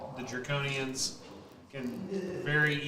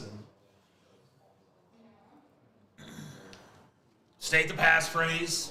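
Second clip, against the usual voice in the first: guttural voice, higher pitch; 3 semitones higher, 4 dB louder than usual. Game master voicing a character who steps out and halts the group, guttural voice. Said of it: "kind of a guttural sounding tone quality".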